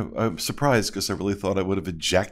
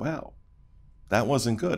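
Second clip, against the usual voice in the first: plain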